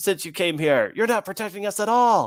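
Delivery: very high, angry, accusing crowd shout. Adding to the scene, the narrator voices villagers yelling at the players: yelling villagers. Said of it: "villagers yelling like things".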